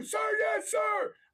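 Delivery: squeaky, very high-pitched voice. A speaker retells a stern exchange with a military instructor, answering as the recruit. Imitating a marine recruit. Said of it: "with Gunnery Sergeant Hartman being like".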